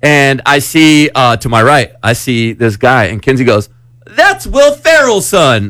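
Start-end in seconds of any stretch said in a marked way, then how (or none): 4.1-5.7 mock loud, very high, swooping blurt. Retelling a friend spotting someone while walking out, retelling a loud remark. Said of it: "all loud".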